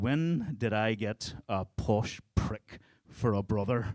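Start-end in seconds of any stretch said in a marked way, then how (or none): none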